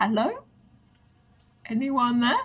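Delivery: hushed half-whisper, barely audible. A player speaks as their character in a game, half-whispering. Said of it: "Anna's going to whisper".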